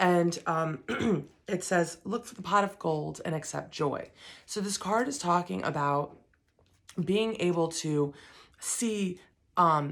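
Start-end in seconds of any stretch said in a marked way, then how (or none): none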